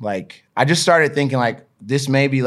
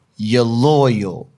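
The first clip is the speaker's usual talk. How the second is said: put-on energetic hype-man motivational voice; 3 dB louder than usual. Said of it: "do it again".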